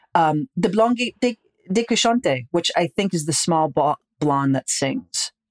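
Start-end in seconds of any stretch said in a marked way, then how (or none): 0.5-2.4 put-on high-pitched French spoken with an Italian accent. Retelling what a woman said in a fantastic mood, french with an italian accent. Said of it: "speaking French with an Italian accent".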